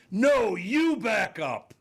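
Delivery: man screaming very high and loud. Retelling a man yelling from the back of a plane; imitating a man yelling. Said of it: "I hear this guy yelling from the back".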